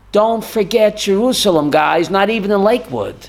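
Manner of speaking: ordinary delivery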